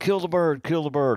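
put-on very high yell, projected far. Retelling yelling at Alan across a field about a bird, retelling a yell. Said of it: "And I'm yelling at Alan".

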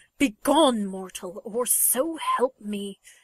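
rough, slow, rising, menacing hiss. The god answers the man calling after him, rough warning hiss. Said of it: "the god of lies kills 38 of the guards that try to stop him, / He is ragged from his time with the Chitauri and his exhausting days on Midgard. His wit is razor-sharp, but the edges have grown jagged".

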